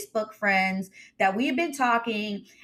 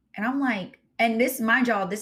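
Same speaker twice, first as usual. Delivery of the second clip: ordinary delivery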